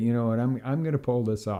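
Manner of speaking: ordinary talk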